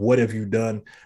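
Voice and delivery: plain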